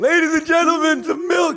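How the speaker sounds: very high, shouted yell. Reenacting the other speaker yelling for milk: mock yelling. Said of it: "I was yelling for milk".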